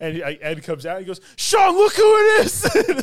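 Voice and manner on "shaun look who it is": put-on very high, loud, drawn-out delight. Retelling a zombie-film scene where Ed comes out to Shaun: retelling Ed, all excited. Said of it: "Like he's all excited to see him".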